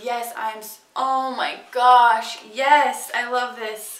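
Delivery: very slow, loud, drawn-out, overexcited gushing. Opening a product long wanted to try: overexcited gushing. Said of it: "Sorry, I'm having a moment".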